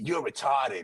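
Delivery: teasing jab in a put-on Boston accent. Retelling a comedy couple's argument, imitating a boston accent. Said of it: "With the Boston accent and shit".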